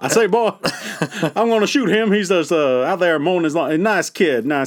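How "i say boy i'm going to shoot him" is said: high, pitched-up cartoon rooster voice. Speaker, told his last voice wasn't Yosemite Sam, tries instead: Foghorn Leghorn voice. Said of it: "more like Foghorn Leghorn".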